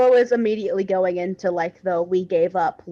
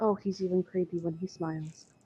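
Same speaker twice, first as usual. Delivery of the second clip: whispered aside, quieter; 12 dB quieter than usual. Whispering something to the party in character: whispering in character. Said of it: "I'm gonna whisper something to the party".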